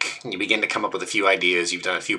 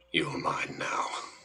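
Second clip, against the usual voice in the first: menacing, very dark, hushed, barely audible whisper; 4 semitones lower, 13 dB quieter than usual. Narrating a scene where an unseen presence speaks: very dark voice. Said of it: "very, very dark voice go".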